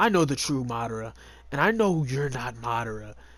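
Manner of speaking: low, threatening, menacing tone. Retelling an anime scene, voicing a character confronting an impostor; mock-menacing tone. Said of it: "Basically in a menacing tone".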